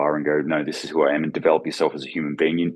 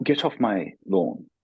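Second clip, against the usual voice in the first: put-on English accent; 4 semitones higher than usual. Joking about a man yelling from his porch decades later, in a put-on english accent. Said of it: "with an English".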